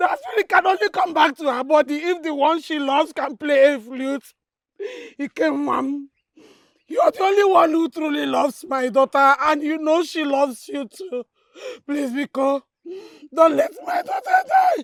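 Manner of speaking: low, tearful voice, crying while speaking. A parent pleads with Biko over a dying daughter, tearful pleading. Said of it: "you need to stop crying".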